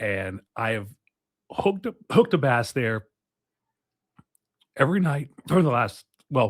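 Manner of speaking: voice catching, choking up. Speaker recounting his nightly fishing, choking up. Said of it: "I'm, uh, choking up".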